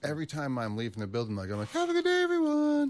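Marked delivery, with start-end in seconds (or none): 1.7-2.9 very high-pitched, loud tone. A big guy recounts what he says leaving the building, in a high-pitched voice. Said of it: "a big dude with a high tone".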